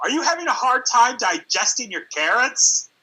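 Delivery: play-acted very high, swooping, dripping sarcastic voice. Retelling mom's remark about the clogged toilet: imitating mom being sarcastic. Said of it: "she would say things very sarcastically".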